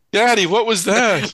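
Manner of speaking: put-on very high-pitched, scared little kid voice. After a co-host's alien noise, voicing a child hearing the podcast: frightened child voice. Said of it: "I hope I'm not frightening any children".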